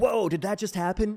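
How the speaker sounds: mock excited commentary-style yelling. Showing own commentary style: imitating own excited commentary yell. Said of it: "I like to yell during my commentary".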